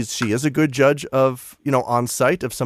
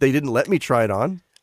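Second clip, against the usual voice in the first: ordinary talk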